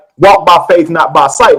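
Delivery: ordinary delivery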